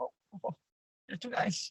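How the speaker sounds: shy, bashful near-whisper. Recalling his reaction whenever he is praised, imitating a shy voice. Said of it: "He's so like shy".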